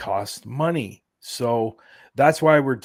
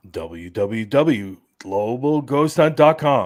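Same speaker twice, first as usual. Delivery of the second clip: slow, loud radio announcer voice. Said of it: "who has the radio voice?".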